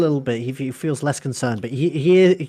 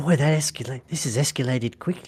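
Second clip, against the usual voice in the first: hushed, half-whispered aside; 4 dB quieter than usual. Narrating a character leaning over to another to speak, in a half-whisper. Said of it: "he he whispers".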